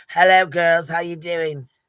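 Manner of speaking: loud native non-American accent. Speaker, not from america, shows what their original accent sounds like. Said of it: "So my original is like".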